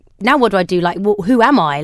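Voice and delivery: normal talking voice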